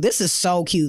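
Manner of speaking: ordinary talk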